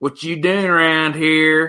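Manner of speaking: exaggerated Southern drawl, rural and twangy. Describing how film actors play the ignorant redneck, in a Southern redneck accent. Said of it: "the redneck that's going to be like".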